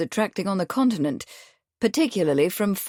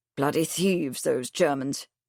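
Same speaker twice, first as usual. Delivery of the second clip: lowered voice, lower pitch; 6 semitones lower, 4 dB quieter than usual. A man checks that no one overhears, then speaks in a lower voice. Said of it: "he said in a lower voice".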